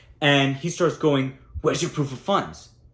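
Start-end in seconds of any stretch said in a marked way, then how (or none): 1.6-2.7 mock hostile, aggressive, confrontational, close to exploding. Retelling a seller's demand during negotiation: imitating an aggressive man. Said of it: "He's very aggressive".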